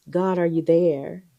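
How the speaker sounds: put-on whispering voice. Showing how someone in a hard season might pray: imitating a whisper. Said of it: "you whispering".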